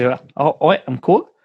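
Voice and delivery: put-on New Zealand accent. Speaker tries out different accents, then goes into a Kiwi accent. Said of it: "the way to get into Kiwi".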